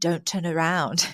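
very hushed voice, masked and disguised. Retelling how he lowered the lights and spoke to her, very hushed tone. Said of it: "in a very hushed tone so you can't quite make out".

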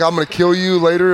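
ordinary talk

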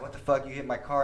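plain

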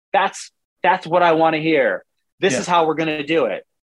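plain

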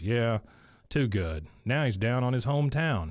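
ordinary talk, nothing marked

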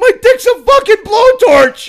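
shrieking, very high-pitched, very loud screaming yell. Retelling a roommate's words while he pees in pain: imitating someone screaming. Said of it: "screaming while he's taking a piss".

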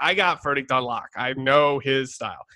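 ordinary talk

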